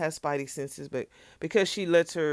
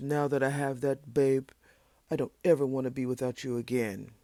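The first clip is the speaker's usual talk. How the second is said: fake deep bass man's voice, lower; 3 semitones lower than usual. Doing the men's voices while retelling what he says, mock deep bass voice. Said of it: "because I got that old deep bass".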